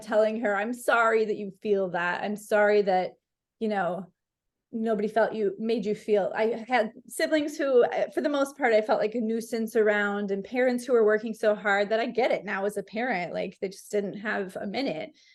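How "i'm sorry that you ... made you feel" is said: put-on crying while speaking. Retelling reading a letter aloud to her, retelling sobbing words. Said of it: "and I'm sobbing".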